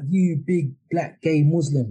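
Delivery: put-on shout, slow and deliberate. Retelling what an old guy shouted during a game: imitating someone shouting. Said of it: "he just shouted out".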